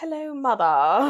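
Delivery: put-on British accent. Showing how the fancy british accent sounds: british accent. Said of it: "the British accent, I think, is like the fancy".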